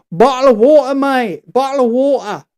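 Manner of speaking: British English pronunciation throughout. Demonstrating the phrase people beg a british speaker to say, in a british accent. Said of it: "British kid with a British accent".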